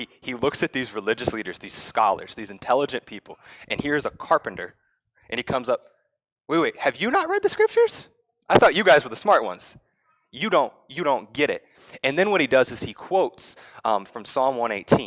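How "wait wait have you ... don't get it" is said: sarcastic, needling, swooping and pitched up. Retelling Jesus challenging the religious leaders: imitating Jesus's sarcasm. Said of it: "if you don't catch that sarcasm".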